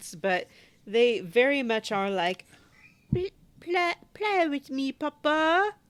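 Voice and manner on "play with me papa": very high, slow, put-on little-kid French accent. Describing the little kids in a game, imitating their line in french kids' accents. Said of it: "I can't do justice to their little accents".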